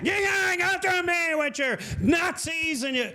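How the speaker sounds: unhinged, breaking-down rant. Retelling what a guy complaining about a podcast said: imitating a guy having a breakdown. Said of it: "This guy had a breakdown".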